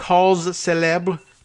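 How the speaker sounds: exaggerated, overdone French accent on "cause célèbre".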